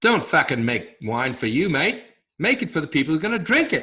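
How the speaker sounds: really bad Aussie accent. Quoting what a visiting university professor once said, in a really bad Australian accent. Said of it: "It's a really bad accent".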